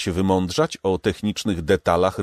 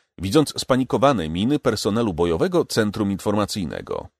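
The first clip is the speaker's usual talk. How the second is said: ordinary delivery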